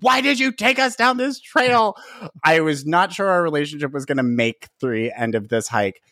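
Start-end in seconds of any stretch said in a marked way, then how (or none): 0.0-2.0 shrill, very high, frantic screaming. Retelling sliding down a hiking trail, screaming at companions: retelling a scream. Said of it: "screaming at them".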